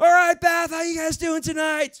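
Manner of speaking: put-on eager, upbeat, loud, high-pitched excitement. A comedian retells greeting the audience on stage in Bath: retelling an excited greeting. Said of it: "I'm so excited".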